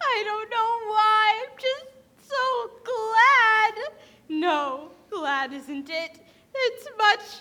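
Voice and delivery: words spoken through tears with audible crying. Answering an adult who asks why she is crying: crying while talking. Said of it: "why are you crying?".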